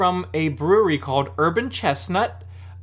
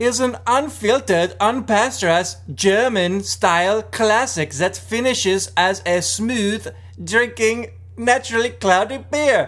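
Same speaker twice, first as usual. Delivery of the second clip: bad put-on German accent, going off the rails; 4 semitones higher than usual. Reading a beer label aloud to a friend, in an interesting german accent. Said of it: "That was an interesting German accent".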